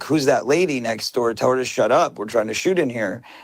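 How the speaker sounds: ordinary delivery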